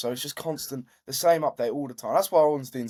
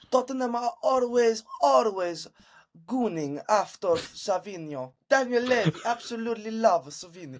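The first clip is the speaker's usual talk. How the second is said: put-on Italian-English accent, higher pitch; 9 semitones higher than usual. Imitating a football transfer reporter's updates: imitating Fabrizio Romano's accent. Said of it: "me doing that accent".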